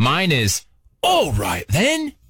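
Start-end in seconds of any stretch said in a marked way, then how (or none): 1.0-2.1 put-on British accent. Explaining a springboard phrase for getting into accents, british accent. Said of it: "the trick to a British accent".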